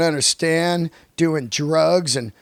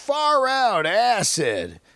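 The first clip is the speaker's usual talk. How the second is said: put-on crazy hippie voice, swooping high; 5 semitones higher than usual. Imitating what a lunatic hippie guy would say: imitating a lunatic hippie. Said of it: "some lunatic hippie guy that was like".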